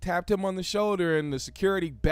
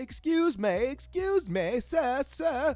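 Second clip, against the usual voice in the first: very slow, drawn-out, high put-on British accent; 7 semitones higher than usual. Retelling a woman running up to someone, imitating a british accent. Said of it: "You running up in the British accent".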